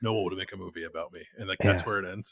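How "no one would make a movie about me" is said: put-on expressionless deadpan, flat and level. Retelling what a Big Ten coach said, retelling a deadpan line. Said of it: "he just like deadpan says".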